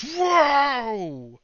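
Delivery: high, loud crowd-like exclamation. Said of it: "everyone goes".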